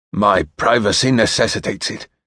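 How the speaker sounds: words sharply bitten out and bitten off. The Earl replies, biting out the words. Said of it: "the Earl bit out".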